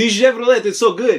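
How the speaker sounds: put-on bad Persian accent that sounds Russian. Doing a used car salesman bit, the speaker uses Bentley's Persian salesman voice. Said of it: "I'm doing Bentley's version of a Persian used car salesman".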